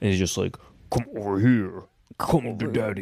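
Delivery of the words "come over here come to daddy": voice sounding badly dubbed over and mismatched. Retelling a movie character's line, imitating Frank's dubbed voice. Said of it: "his voice is dubbed is so fucking funny".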